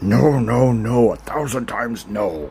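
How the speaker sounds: heavy, rough, big gruff male voice. Playing through a story, the speaker voices a character refusing the would-be trainer: gruff male voice. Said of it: "gruff male voice going".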